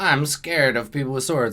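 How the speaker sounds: normal talking voice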